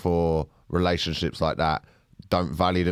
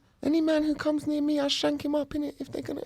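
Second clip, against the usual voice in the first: put-on, very high-pitched voice; 4 dB quieter than usual. Talking about playing a drug dealer, speaker tries a high-pitched drug dealer voice. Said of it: "he's got a really high, high pitched voice".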